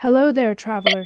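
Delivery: normal talking voice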